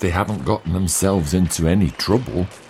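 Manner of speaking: plain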